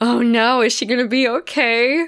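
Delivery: put-on nervous, worried tone. Retelling a first watch of a scene: retelling own nervous worry. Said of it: "I remember being very nervous".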